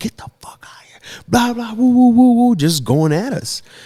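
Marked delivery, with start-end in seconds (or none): 0.0-2.6 shrill, very high screaming yell. Retelling how security guards harassed friends in a parking lot: imitating guards screaming. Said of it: "just started screaming".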